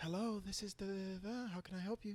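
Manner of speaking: hot, sultry female voice. Retelling a phone call to an escort number: imitating a hot lady's voice. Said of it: "Some hot lady, hot voice".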